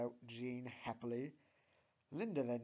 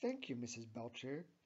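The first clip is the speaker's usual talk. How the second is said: ordinary delivery, nothing marked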